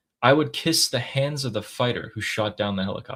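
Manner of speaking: plain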